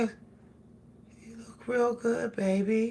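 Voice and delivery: very quiet, soft, tongue-tied murmur. A woman retells her husband complimenting her outfit, imitating husband's soft voice. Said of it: "his voice goes so soft".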